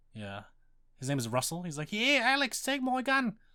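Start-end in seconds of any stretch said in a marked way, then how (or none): 1.9-3.3 bad, very high, shrill, loud put-on voice. Describing a game character, imitating Rhys Darby: Rhys Darby impression. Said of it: "probably a terrible rendition of him".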